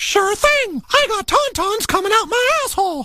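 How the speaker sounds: very high, squeaky, tough gangster voice. Recalling a South Park episode where Mickey acts like a gangster; Mickey Mouse gangster voice. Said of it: "where he's like a gangster".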